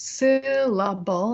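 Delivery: syllable stressed on syl-, pitch falling afterward. Demonstrating English word stress by pitch: stress on first syllable of 'syllable'. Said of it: "I show that by pitch".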